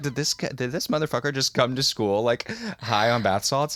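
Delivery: ordinary delivery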